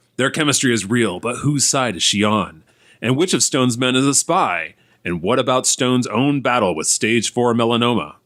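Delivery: dramatic movie-trailer announcer voice. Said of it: "in his announcer voice".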